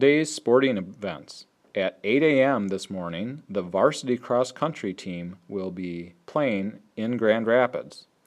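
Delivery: slow, careful reading pace. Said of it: "I'm gonna say it nice and slowly".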